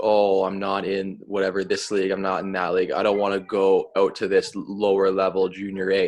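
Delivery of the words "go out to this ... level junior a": ordinary talk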